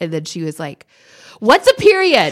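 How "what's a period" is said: put-on very high, loud, carrying little-kid voice. Retelling what the child asked in the bathroom: imitating a loud question. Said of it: "Loud, loud, loud".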